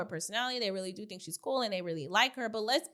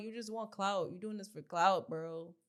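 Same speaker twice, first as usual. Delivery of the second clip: play-acted crying, words through sobs; 2 semitones lower, 4 dB quieter than usual. Retelling a housemate's accusation made while crying: imitating someone crying. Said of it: "While crying".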